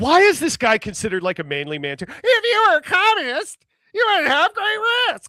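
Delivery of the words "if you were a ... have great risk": mock squeaky helium voice, higher and louder. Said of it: "you're sucking helium".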